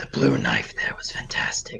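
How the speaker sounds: sly, low, whispered aside.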